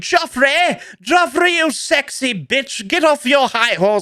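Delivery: very high, slow, lofty, drawn-out character voice. Showing a voice for a prestigious apple character, Sir Appleton. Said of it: "It's like a voice that I do".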